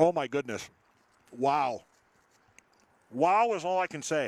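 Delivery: speaking with mouth full of food. Just took a bite of a sandwich, reacting for viewers, mouth full. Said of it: "Going to need to try to swallow that".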